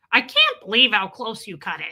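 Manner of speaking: puppet-like voice. Retelling something their mom said: imitating mom's Muppet-like voice. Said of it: "That's what my mom sounds like".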